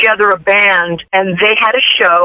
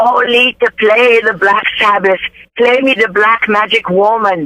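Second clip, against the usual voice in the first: put-on Italian accent. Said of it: "with her thick Italian accent".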